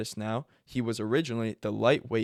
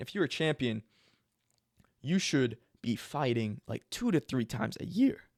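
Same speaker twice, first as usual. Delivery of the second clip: cracking, breaking voice mid-line. Discussing a fighter's inactivity as champion, voice crack. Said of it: "That was a voice crack".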